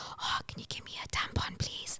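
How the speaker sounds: barely audible, soft, ashamed whisper. Mimicking how people ask for a tampon, imitating someone whispering. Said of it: "why are you whispering it?".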